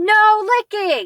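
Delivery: lively, emotional exclaiming. Showing learners how to read an exclamation: excited shout. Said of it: "I tried to make my voice a little bit exciting".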